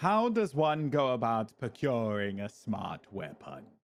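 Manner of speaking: words randomly over-enunciated. Asking the game master a question during a tabletop game: over-enunciated Moira Rose voice. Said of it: "She like over enunciates words randomly... So that's what I'm doing now".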